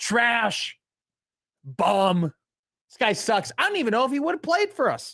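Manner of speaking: very high, sneering, scornful tone, acted out. Imitating fans after the recruit does not commit: imitating dismissive fans. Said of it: "And they're like".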